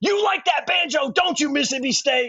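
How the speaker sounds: high-pitched scream at the top of the lungs. Retelling a friend yelling at rival fans from a van: imitating Joe Davis screaming. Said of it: "was screaming at the top of his lungs".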